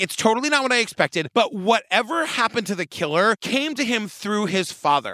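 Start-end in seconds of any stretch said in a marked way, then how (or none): none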